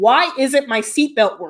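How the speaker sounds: ordinary delivery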